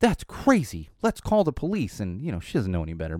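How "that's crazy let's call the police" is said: put-on high, really upset child outburst. Retelling what the speaker's kid told the speaker's wife at a drive-thru, imitating a kid getting upset. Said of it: "she gets real upset at the drive-thru".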